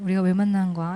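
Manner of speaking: tender, snug, gentle, soft and cozy. Showing how to ask a man you like a question, gentle and soft. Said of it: "이렇게 포근하게 물어봐야지".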